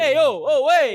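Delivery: high put-on New York Italian accent. Joining in after a suggestion to use accents, in a stereotypical new york italian accent. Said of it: "stereotypical like New York Italian accents".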